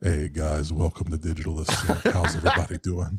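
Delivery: put-on voice dropped an octave. Showing the voice they'd use greeting a stream audience, voice dropped an octave. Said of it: "drop the the octave a little bit too. and and kind of talk like this".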